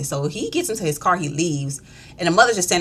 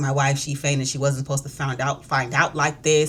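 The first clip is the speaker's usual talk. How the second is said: ordinary talk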